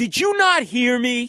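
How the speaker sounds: play-acted, deliberate angry outburst, loud, slow, high. Retelling snapping at an intern who won't give a studio line: imitating own angry snapping. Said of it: "And I snapped and I went".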